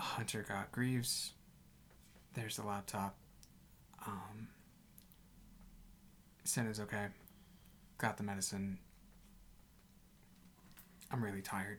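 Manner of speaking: very quiet voice. Voicing a character who sets down a laptop and reports in: very quiet voice. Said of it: "very quietly just says".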